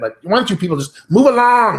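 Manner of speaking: high, loud, whiny nasal nerd voice. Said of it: "they talk to their nose like that".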